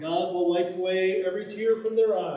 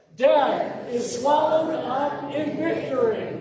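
slow, very loud group speaking together; 7 semitones higher, 3 dB louder than usual. Leading listeners in finishing a verse together, saying it really loudly. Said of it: "we're going to say it really loudly together".

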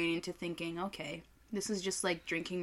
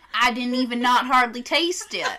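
fake Southern drawl, higher and louder; 6 semitones higher, 12 dB louder than usual. Joking about tasting burnt tire in a beer, put-on Southern accent. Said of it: "There's nothing wrong with Southern accent".

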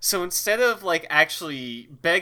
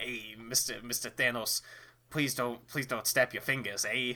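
1920s mobster voice, lower, quieter, slower; 4 semitones lower, 8 dB quieter than usual. Voicing an imagined plea to someone, in a 1920s mobster voice. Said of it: "You keep turning into like a 1920s mobster when you do that voice".

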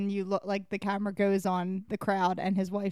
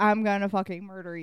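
ordinary talk

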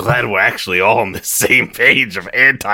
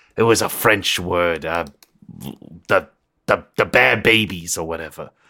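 rambling put-on detective voice, much lower; 2 semitones lower, 4 dB quieter than usual. In character as a detective, telling a story: rambling detective character voice. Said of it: "I'm [name]".

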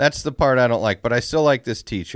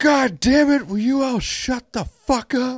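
play-acted sudden yelling fit, very high pitch; 13 semitones higher than usual. Retelling how a fourth-grade music teacher flipped out at the class, retelling a teacher's yell. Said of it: "just flipped out on the whole class out of nowhere and just yelled".

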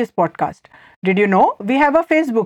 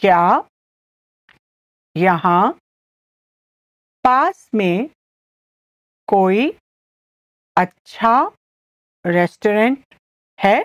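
very slow, halting Hindi, broken into small chunks; 3 semitones lower than usual. Teaching a Hindi phrase for the listener to repeat along, the speaker says it very slowly. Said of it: "I'll say it again slowly".

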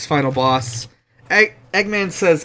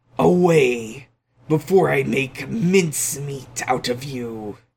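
put-on menacing villain voice; 2 semitones lower, 3 dB quieter than usual. Recapping a game boss fight, quoting the villain's pre-fight line in mock-menacing Eggman voice. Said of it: "Eggman says in a super menacing voice".

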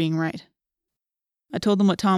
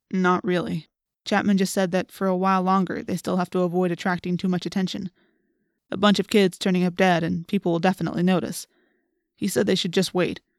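ordinary delivery

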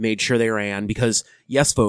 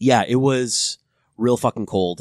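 ordinary talk, nothing marked

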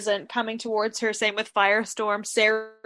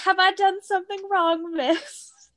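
put-on very high-pitched little child voice with British accent; 10 semitones higher than usual. Recapping a scene, a boy asks a woman if he did wrong: young Rip's British kid accent. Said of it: "I don't know if this kid is actually British".

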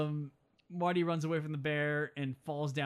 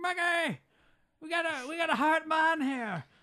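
put-on Irish accent, much higher, slower; 13 semitones higher, 4 dB louder than usual. Retelling a movie scene where Seamus McFly saves a man: bad Irish accent. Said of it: "I'm not really doing a good Irish accent there".

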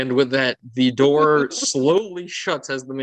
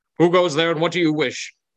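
loud, regal, kingly shouting voice; 3 semitones higher than usual. Voicing a startled king calling to a knock at the door: yelling king. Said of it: "he yells without even looking towards the door".

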